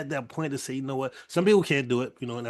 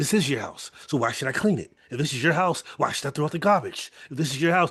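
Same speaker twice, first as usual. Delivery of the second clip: put-on child voice, really aggressive. Retelling a young boy's joke video repeating his parents, imitating a kid saying it aggressively. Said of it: "he's like saying it really aggressively".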